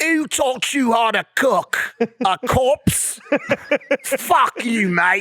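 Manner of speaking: hammy, overdone, put-on British accent. Pretending to be him for a second, after a request for a better accent, put-on British accent. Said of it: "Do you have a better British accent?".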